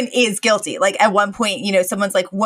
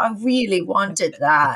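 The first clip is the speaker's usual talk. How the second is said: forlorn, mournful, sorry-for-itself sad tone. Retelling Mr. Sheffield losing his sandwich, doing a sad Mr. Sheffield impression. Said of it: "so sad".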